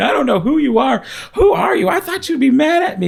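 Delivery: put-on sobbing. Retelling what was said to Jesus in a vision: retelling own crying. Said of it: "And I'm crying".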